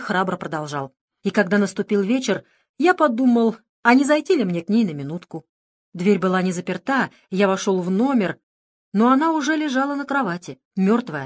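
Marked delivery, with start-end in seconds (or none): none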